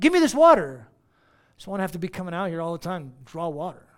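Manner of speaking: very loud, swooping sarcastic tone. Retelling the Samaritan woman's reply about the water: imitating sarcasm. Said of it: "It was like sarcasm".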